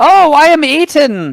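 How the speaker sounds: loud shouting. Voicing a cult actor on stage being swallowed by a monster: shouting. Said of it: "And she shouts".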